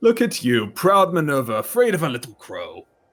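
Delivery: big, loud, thundering, booming voice, swooping pitch. In narration to Trixie, a familiar voice addresses Minerva in a loud booming voice. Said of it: "It is a loud, booming voice".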